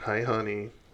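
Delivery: flirtatious seductive tone. Voicing a character trying to seduce a guard: flirtatious seductive greeting. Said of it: "kinda tips her head and pokes her little pointy chin out at him and says".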